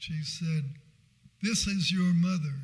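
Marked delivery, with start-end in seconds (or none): 1.4-2.5 mock loud, stern, angry motherly voice. Retelling a phone call from his mother: imitating mother's angry tone. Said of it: "in just that angry a tone".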